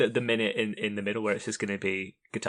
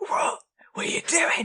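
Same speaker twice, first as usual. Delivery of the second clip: heated, confrontational, angry outburst, acted out. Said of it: "where he's shouting at the guy".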